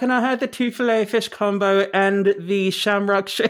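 put-on off-target Irish accent. Reenacting a fast-food order that came out in an odd accent: attempted irish accent. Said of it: "that wasn't even the right accent".

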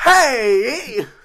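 put-on high, loud yell. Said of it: "when you yell, it's more like".

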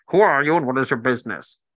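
loud, booming, strange, recorded-sounding voice. Voicing an unseen voice that questions the party: booming voice from inside a bubble. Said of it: "a booming voice comes from surrounding the party".

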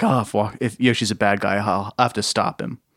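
plain

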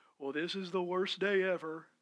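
low, pessimistic, defeated-sounding donkey voice. Acting out a talk with a gloomy Eeyore: Eeyore voice. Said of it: "y'all remember Eeyore from Winnie the Pooh?".

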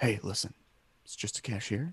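low-key, calming, soft, toned-down voice. Retelling calming down a man who is freaking out: imitating own calm toned-down voice. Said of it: "I just kinda go like this".

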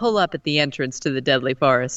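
ordinary delivery

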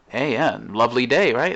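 overly cheery, loud, sing-song friendly voice. Retelling a stranger greeting someone on the street: imitating a friendly stranger. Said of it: "they'll say something to you with your head down".

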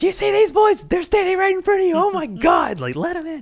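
put-on yelling at a very high pitch. Retelling a friend's mom yelling at the night desk person: imitating Miss Harrell yelling.

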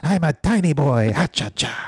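very slow delivery, every word dragged out. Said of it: "So if [name] was a tiny boy".

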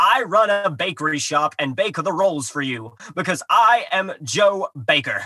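ridiculous, over-the-top, caricatured fake American accent. Recapping a story, quoting a character's disguise, in a caricatured American accent. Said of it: "caricature of an American accent".

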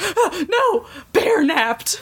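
put-on, very high, slow, drawn-out panicked outburst. Retelling a character panicking that the bear was kidnapped: imitating someone freaking out. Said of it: "she starts freaking out".

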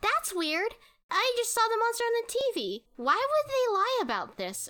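mock, very high, incredulous voice, rattled off fast.

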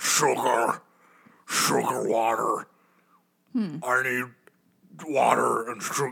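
strange, otherworldly alien voice.

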